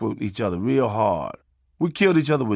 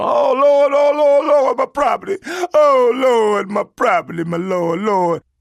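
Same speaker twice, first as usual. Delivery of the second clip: very high-pitched, very slow, stretched-out screaming; 11 semitones higher, 6 dB louder than usual. Telling about a fire on his block, imitating Miss Lee screaming. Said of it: "Miss Lee scream".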